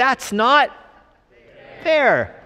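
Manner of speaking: very high put-on six-year-old child voice. Speaker retells the workers' protest to the landowner, in best six-year-old voice. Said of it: "in their best six-year-old voice".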